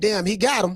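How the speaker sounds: chuckling, delighted, amused laughing speech. Retelling his own reaction to a rival's jab: imitating himself laughing. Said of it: "I'm sitting back laughing like".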